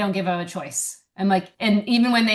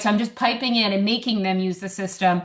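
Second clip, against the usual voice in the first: ordinary talk, nothing marked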